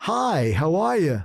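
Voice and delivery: put-on cheery upbeat voice. Recalling walking up nervous but determined, acting out a cheery greeting. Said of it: "not going to be grumpy".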